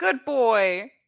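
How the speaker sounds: high, very loud cheering yell. Declaring an in-character action during a fight, shouting in character. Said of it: "I shout out".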